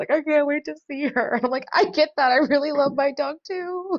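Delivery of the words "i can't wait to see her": mock tearful voice, talking through tears, crying. Retelling what Carlos said about reuniting with his dog, imitating Carlos crying. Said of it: "And he's like crying".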